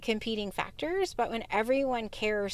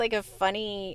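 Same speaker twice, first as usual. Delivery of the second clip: ordinary talk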